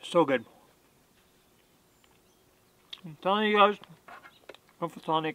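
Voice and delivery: talking with mouth full. Tasting the steak and praising the seasoning, talking while eating. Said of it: "I'm talking while I'm eating".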